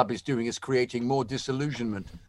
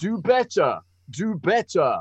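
deliberately awful fake American accent, high and swooping; 5 semitones higher, 4 dB louder than usual. Mimicking the other speaker on request, on purpose badly; deliberately bad American impression. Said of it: "You're very American".

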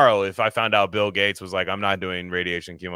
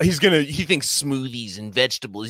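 nasal dork voice, much higher; 6 semitones higher than usual. Imitating what everybody says about a man, nasal Hey Arnold dork voice. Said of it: "it's like this nasally, like, "Hey Arnold, dork on the bus," like type voice".

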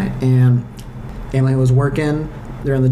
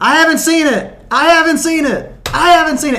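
put-on, very high, shrill, repeated shouting; 4 dB louder than usual. Retelling covering their ears to avoid spoilers: retelling a yell. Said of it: "just started yelling like".

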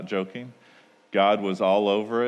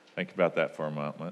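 ordinary delivery

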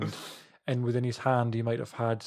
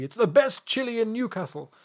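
very high, pitched-up proclaiming voice; 11 semitones higher, 3 dB louder than usual. Joking about a friend's chili, doing an impression of Rik from Bottom. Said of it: "an impression of, um, uh, the almighty Rick from Bottom".

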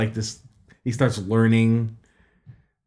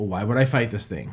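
ordinary talk, nothing marked

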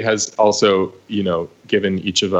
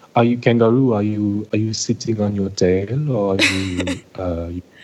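put-on French accent. Imitating a cast member asking about being a kangaroo: imitating Magali's French accent. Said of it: "she has this amazing French accent".

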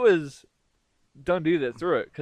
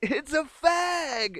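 high, very slow, drawn-out yell. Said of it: "his cab driver friend's like".

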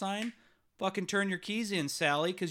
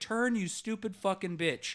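acted-out angry outburst tone. Recounting a run-in with another driver at a red light, retelling an angry outburst. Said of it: "Now I'm pissed".

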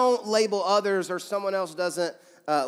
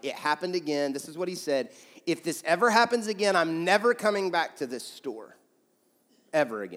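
ordinary talk, nothing marked

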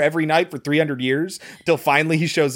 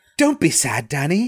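put-on British accent. Retelling a character's farewell line from a movie: British accent. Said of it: "in a British accent".

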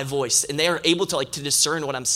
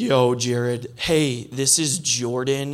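very slow, deep-voiced delivery; 3 semitones lower than usual. Retelling a call from an unknown number: imitating a deep voice. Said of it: "this deep voice".

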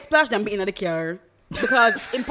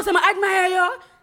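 put-on shout, pitched much higher; 7 semitones higher than usual. Retelling how a man called out to the speaker, imitating a man shouting. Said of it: "he's shouting because I didn't go over".

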